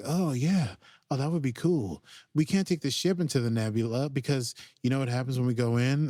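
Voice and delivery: put-on blissed-out, stoned-sounding voice. Retelling a scene where Stamets acts very groovy: imitating Stamets acting blissfully high. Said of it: "a very blissful high".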